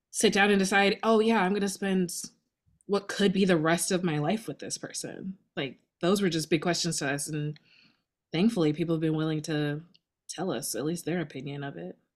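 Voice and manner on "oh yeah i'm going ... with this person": normal talking voice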